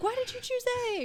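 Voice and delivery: very high, shrill yelling. Retelling yelling at a podcast while listening: imitating yelling at a podcast. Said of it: "yelling at my, at the Spotify".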